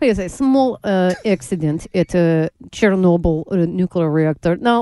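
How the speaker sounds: mock Russian accent in a newscaster voice. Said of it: "you do the Russian accent".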